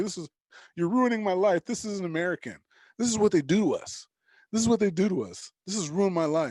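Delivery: acted, aggrieved, distraught, deeply upset man's lament. Retelling a man's reaction to learning he is on a no-fly list: imitating a very upset man. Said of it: "he was super in his feelings".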